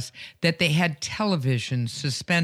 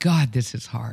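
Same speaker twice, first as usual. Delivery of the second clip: put-on murmur under breath, much lower; 5 semitones lower than usual. Retelling what a guy in his row said, retelling a murmur under breath. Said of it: "he murmured under his breath".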